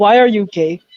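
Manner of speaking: heavy put-on Indian accent, laid on thick. Imagining what he would ask the manga's creator, in a thick indian accent. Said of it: "why am I saying it in a thick Indian".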